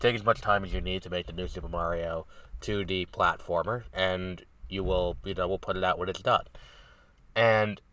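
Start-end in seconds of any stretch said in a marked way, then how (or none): none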